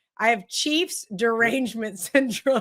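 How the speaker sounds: words breaking into laughter. Quoting a friend's text message about yourself, laughing while talking. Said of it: "I can't ever say this without laughing".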